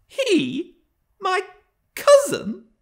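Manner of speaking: very high, scornful, mocking laughing cry through words. Cathy, told that mr. hareton is her cousin, cried with a scornful laugh. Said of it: "cried Cathy with a scornful laugh".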